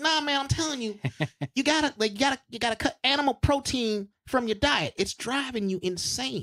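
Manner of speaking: very high-pitched put-on voice. Speaker quotes a comic who has been vegan for years: imitating a comic's high voice. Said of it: "He's got a really high voice".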